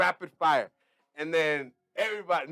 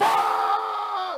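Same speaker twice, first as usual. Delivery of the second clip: sudden, loud, high, aggressive put-on outburst; 6 semitones higher than usual. Retelling the first moment on an open mic stage: imitating a loud scream. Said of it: "I screamed really loud".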